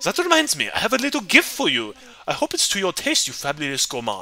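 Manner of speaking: fake German accent, sing-song. Voicing Klaus, who offers a little gift: put-on German accent. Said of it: "I need to do a German accent".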